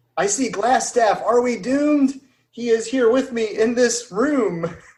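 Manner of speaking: high, alarmed shouting, yelled out loud. A player in a tabletop game voices their character, yelling out. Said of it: "I'm gonna yell out".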